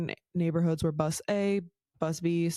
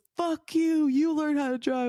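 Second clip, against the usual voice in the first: very high, shrill, all-out yelling; 10 semitones higher, 3 dB louder than usual. Retelling a road rage fight, retelling yelling at the driver. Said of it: "yelling at this man".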